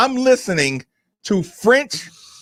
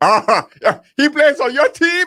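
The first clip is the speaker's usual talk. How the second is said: teasing, mocking put-on French accent, higher pitch; 8 semitones higher than usual. Retelling what French teammates said, mocking of the accent: imitating a French accent. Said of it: "mocking of the accent".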